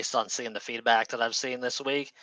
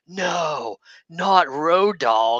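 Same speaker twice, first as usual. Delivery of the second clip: put-on high, very slow, dripping sarcastic drawl; 6 semitones higher, 7 dB louder than usual. Quoting a wrestler's tweet response: imitating a sarcastic tweet. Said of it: "the most sarcastic".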